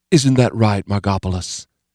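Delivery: speaking sweetly. [name] looks at Margopolis and puts a question to her, speaking sweetly. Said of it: "spoke sweetly".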